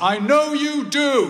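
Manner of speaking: loud, very high voice. Retelling dad calling out as the speaker leaves the hospital ward, loud voice. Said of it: "in a loud voice".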